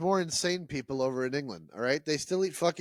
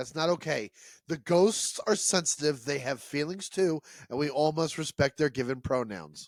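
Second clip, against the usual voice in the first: ordinary talk, nothing marked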